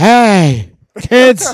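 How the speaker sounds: put-on loud old-time announcer voice.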